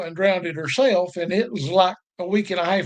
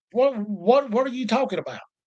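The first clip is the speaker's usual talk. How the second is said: put-on stutter, higher pitch, faster pace; 3 semitones higher than usual. Recalling being questioned by a man, replaying his own reply: retelling own stammering. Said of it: "I'm stuttering like [name] and Porky Pig combined".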